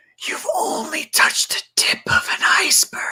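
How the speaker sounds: hushed, breathy whisper, close to the ear. Describing a man who picks up a child, quoting his words as a retold whisper. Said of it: "he whispers to you".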